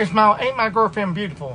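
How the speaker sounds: ordinary delivery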